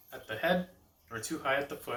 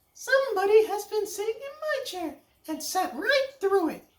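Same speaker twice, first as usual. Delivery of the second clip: squeaked out, high and loud; 5 dB louder than usual. Narrator reading the Little Wee Bear finding his chair: Little Wee Bear's little wee voice. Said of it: "cried the Little Wee Bear in his little wee voice".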